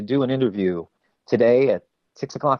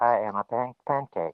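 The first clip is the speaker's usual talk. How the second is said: flat robot voice, quieter; 5 dB quieter than usual. Discussing a character, a speaker demonstrates how Pancake talks, in a monotone Pancake robot voice. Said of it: "speak in a very monotonic voice".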